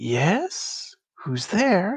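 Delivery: soft, gentle voice. Storyteller voicing someone inside a tree answering a knock, soft voice from a tree. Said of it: "you hear a soft voice from inside the tree say".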